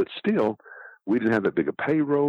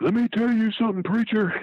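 mock very high, shrieking wrestler-style scream. Retelling a wrestler grabbing the microphone: imitating Big Bill screaming. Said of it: "And he screams".

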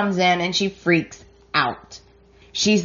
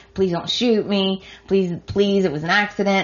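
mock, desperate, imploring pleading, repeated. Retelling a soap scene where a character pleads not to be shot: imitating someone begging. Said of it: "She's begging".

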